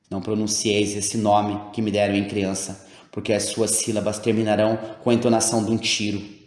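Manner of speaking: ordinary delivery, nothing marked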